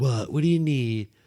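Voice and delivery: slow, drowsy, sleepy drawl, as if just woken. Retelling how Fran answered when woken on the couch: imitating Fran's slow voice. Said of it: "All slow".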